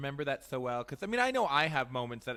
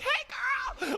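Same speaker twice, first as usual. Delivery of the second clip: mock over-the-top excitement, very high pitch. Imagining greeting a star: mock over-the-top excited greeting. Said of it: "because I'm so extra anyway".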